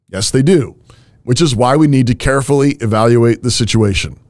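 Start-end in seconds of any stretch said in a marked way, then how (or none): none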